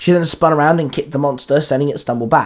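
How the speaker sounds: plain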